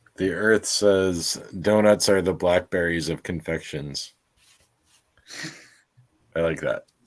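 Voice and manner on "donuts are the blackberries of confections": ordinary talk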